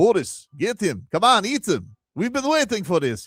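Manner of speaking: put-on tiger voice with Russian accent. Imagining what the other tigers in a Russian circus say: Russian-accented talking tiger. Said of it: "Do you think the other tigers are like".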